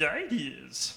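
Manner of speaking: low, quiet creature voice. Giving the classic example of a guide, in a Yoda impression. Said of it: "your impression of Yoda".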